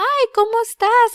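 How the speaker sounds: put-on very high baby talk voice. Retelling how the brother-in-law greets the baby: imitating baby talk. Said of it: "just start baby talking her".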